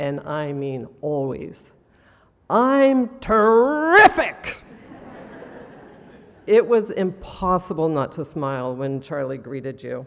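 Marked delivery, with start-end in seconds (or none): 2.5-4.6 huge, very loud, booming voice, pitched up. Retelling how Charlie always answered a greeting: imitating Charlie's big booming voice. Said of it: "in his big, booming voice".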